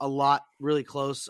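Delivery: ordinary delivery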